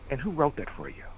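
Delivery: very quiet, hushed, calm, patronizing, condescending tone. Retelling a journalism professor's question about a high school story, mock-condescending, calm.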